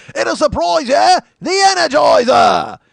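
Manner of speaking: put-on loud, very high-pitched screaming with Australian accent. Recalling an eighties battery commercial, screaming Jacko impression. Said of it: "Australian rugby guy come in and scream at you".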